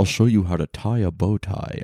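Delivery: put-on, suave, smooth voice. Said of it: "I gave him that voice".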